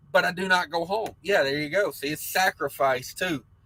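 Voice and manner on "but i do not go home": ordinary delivery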